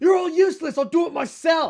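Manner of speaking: furious shout, very high, very loud and shrill. The game master voices an enemy who was hiding; angry yell. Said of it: "He yells".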